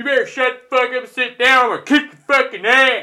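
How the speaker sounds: very loud, high, threatening yelling. Retelling a home fan yelling at away fans: imitating someone yelling. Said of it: "he started yelling at him again".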